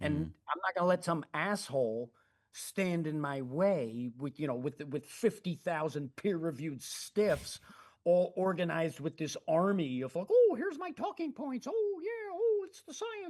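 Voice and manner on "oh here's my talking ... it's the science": very high, put-on cartoonish caricature voice. Mimicking the peer-reviewed stiffs he won't let stand in his way: imitating those guys' voice. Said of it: "I can't even not make that voice".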